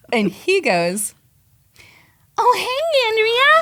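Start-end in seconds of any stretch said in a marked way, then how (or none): 2.3-3.6 strange, odd, very high squeaky voice. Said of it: "Like that".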